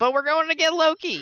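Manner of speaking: very high shouted yell. In a role-playing game, a player's character stops in their tracks, yelling. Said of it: "I stop in my tracks and I yell".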